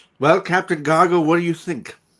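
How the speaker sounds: very loud, carrying call. Voicing a character who puts a question to the captain, very loud. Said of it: "She says very loudly".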